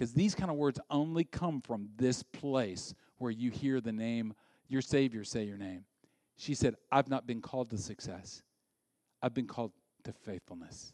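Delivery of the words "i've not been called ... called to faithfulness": soft, hushed whisper. A speaker quoting a woman's words to the audience, retelling a soft whisper. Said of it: "she is whispering it".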